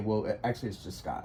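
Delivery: low, soft, correcting tone. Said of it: "I would respond just like that in that tone".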